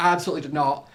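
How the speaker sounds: usual speaking voice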